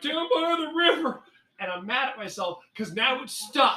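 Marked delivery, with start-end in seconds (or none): 0.0-1.2 very high-pitched comic character voice, fully committed. Quoting a famous comedy line: Chris Farley voice. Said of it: "I'm even doing the hand signs".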